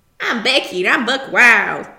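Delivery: very loud, belted country accent. Riffing on the name Becky Buckwild, saying it in a country voice. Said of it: "you want to go like country".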